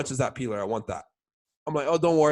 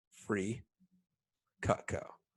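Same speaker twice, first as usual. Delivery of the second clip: theatrical, dramatic, breathy whisper; 4 semitones lower, 10 dB quieter than usual. Telling a customer they'll get free cutco, with dramatic delivery. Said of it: "And I say it like that dramatically".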